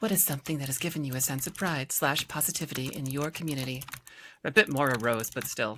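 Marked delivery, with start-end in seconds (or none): 0.0-3.8 softer formal reading voice. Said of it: "read it in my reading voice".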